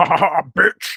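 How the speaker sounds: slow, drawn-out, menacing horror villain voice. Joking about a slasher villain cackling on a skateboard: Robert Englund Freddy Krueger impression. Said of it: "that sounded very much like a perfect Robert Englund, uh, impression".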